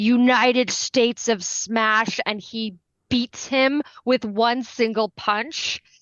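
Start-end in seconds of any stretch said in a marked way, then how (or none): none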